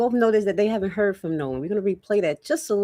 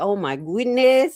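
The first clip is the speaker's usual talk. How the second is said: imitated Haitian accent. Exclaiming while recounting phone calls: put-on Haitian accent. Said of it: "I had to say it like a Haitian".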